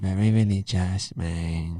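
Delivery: put-on Mexican wrestler movie-style voice. Quoting the very beginning of a movie, in a Nacho Libre voice. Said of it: "Why are you doing that voice?".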